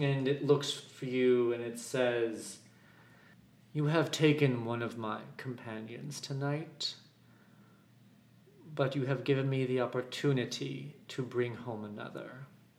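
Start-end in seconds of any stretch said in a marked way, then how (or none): 3.7-12.3 low, deep, rolling, rumbling voice. A storyteller voices a creature speaking to the listeners; deep rumbling voice. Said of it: "you hear a deep kind of rumbling coming from it".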